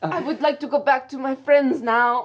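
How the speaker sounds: polite tone in a put-on French accent. Imitating what a woman said: put-on french accent. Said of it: "In a French accent".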